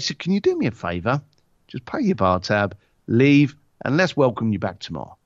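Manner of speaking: low, private-sounding one-to-one voice. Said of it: "And he'd be very quiet".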